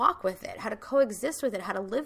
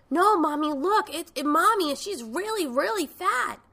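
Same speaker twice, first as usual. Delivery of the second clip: put-on high-pitched little-girl screaming yell. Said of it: "She's screaming".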